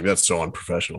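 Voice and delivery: mock irritated, mad, disapproving tone. Imagining how a listener would react to noise near the microphone: imitating Tony being mad. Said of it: "Tony would be like".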